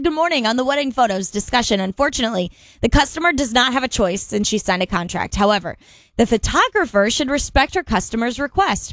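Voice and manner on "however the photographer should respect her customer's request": normal talking voice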